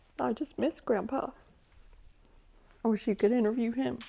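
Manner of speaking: crying through the words. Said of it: "I'm sorry".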